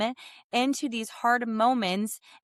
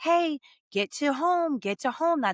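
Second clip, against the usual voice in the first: put-on nice, sweet voice, higher and slower; 4 semitones higher than usual. Retelling a baseball game, quoting Mitch calling out to Troy: Mitch's sweet little voice. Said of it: "Mitch's nice, sweet little voice".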